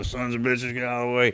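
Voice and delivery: put-on raspy voice. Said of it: "You know how graspy he is".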